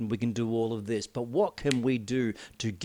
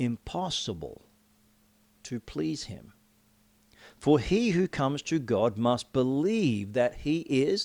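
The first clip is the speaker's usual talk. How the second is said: slow, unhurried reading, getting slower; 2 semitones higher than usual. Speaker reading a bible verse for those who haven't heard it, reading slowly. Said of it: "I'm going to read this slowly".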